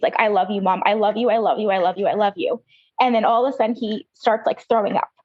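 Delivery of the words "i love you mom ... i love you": imitated near-tearful voice. Retelling what the son said in pain to mom: imitating son almost crying. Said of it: "almost crying".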